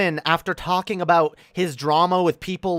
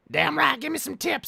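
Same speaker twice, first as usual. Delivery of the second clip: rough, creaky, raspy, pitched-up put-on pimp voice; 8 semitones higher, 4 dB quieter than usual. Explaining a love of mimicking people, the speaker does a pimp impression. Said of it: "I do my pimp impression".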